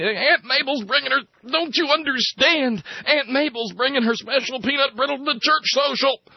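mock screeching at a very high pitch. Retelling how an agent shakes a man by the lapels, retelling a scream. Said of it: "he's screaming again at him".

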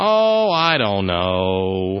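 smarmy, whiny, loud, very drawn out. Retelling an answer given at a press conference, in Rumsfeld's smarmy, whiny voice. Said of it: "that smarmy, whiny voice that he uses".

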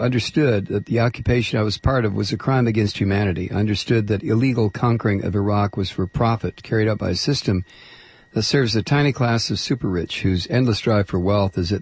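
normal talking voice

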